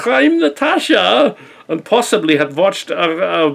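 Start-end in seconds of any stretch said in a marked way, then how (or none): 0.0-1.4 put-on Russian accent, much higher. Mocking someone's poor Russian accent, quoting in a Natasha cartoon Russian accent. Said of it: "watched a lot of Natasha, going".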